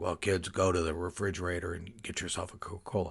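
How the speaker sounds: put-on, gravelly, rough chain smoker's voice. Retelling an old lady's greeting: imitating a gravelly-voiced chain smoker. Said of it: "I'll sort of imitate her voice".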